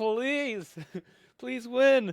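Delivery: mock very high-pitched, desperate, begging scream. Speaker retells watching the competition on a dying phone: retelling a screamed plea. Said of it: "You were screaming".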